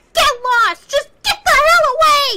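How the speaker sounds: very loud, very high, shrill, dramatic angry yell. Voice-acting a script at home, redoing a line more dramatically: angry shout. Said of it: "needs to sound more dramatic".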